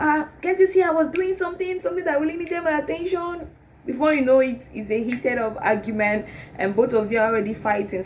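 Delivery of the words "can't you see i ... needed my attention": acted-out shouting, shrill and very high-pitched. Acting out the other partner shouting back as an argument heats up: shouting. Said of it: "He will start shouting also".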